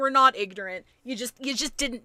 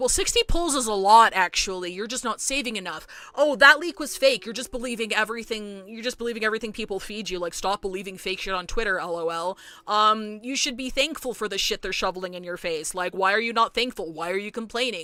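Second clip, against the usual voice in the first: plain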